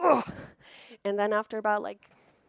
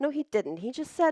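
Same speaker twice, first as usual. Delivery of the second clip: ordinary talk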